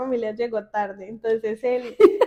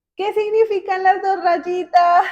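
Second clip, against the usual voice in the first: high, loud yelling; 6 semitones higher, 6 dB louder than usual. Retelling how he called out from the bathroom, imitating him yelling. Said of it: "cuando me grita".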